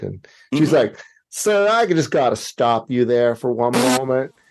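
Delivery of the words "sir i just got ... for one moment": put-on Southern accent. Retelling what a support agent said on the phone: imitating a southern accent. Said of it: "what to me sounds like a Southern accent".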